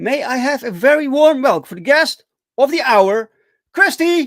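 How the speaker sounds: grand, high, loud showman announcer voice.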